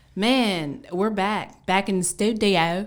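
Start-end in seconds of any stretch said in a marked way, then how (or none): 1.7-2.9 raised, put-on British accent on the phrase. Announcing the return to the studio after a mic check; british accent. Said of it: "Was that a good British accent?".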